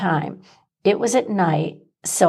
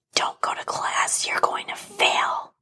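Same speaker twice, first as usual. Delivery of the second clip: whispered, hissing, snake-like voice. Narrator retells a voice that spoke during finals, in a hissing, snake-like voice. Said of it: "In a hissing, snake-like voice".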